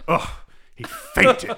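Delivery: mock exasperated, annoyed, sighing huff. Retelling a scene where a man faints, acting out Batman's reaction: mock-annoyed sigh as Batman. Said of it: "he kind of sighs and he's like".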